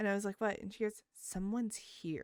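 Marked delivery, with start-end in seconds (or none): 1.2-2.2 spooky, foreboding, ominous tone. Retelling her daughter looking at the front door at night, imitating an ominous voice. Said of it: "says it like in that really ominous kind of sound".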